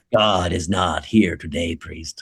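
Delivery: fake possessed voice, deep. Imitating the speaker's mother, who talks like Regan from The Exorcist: Regan voice. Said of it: "my mother's Regan from The Exorcist".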